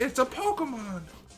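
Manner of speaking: very high, squeaky cartoon voice. Joking about how the cartoon says Pokemon: Mickey Mouse voice. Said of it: "That sounded like Mickey Mouse just there".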